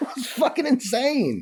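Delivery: high, laughing disbelief. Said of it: "I'm laughing now".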